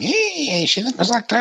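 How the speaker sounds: very high, put-on old crone voice.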